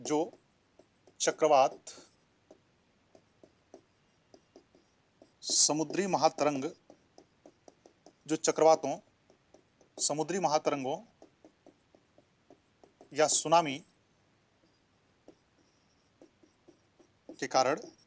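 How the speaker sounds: speaking slowly, at dictation pace. Speaker dictating a definition for listeners to write down: speaking slowly. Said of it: "मैं इसलिए धीरे धीरे बोल रहा हूं".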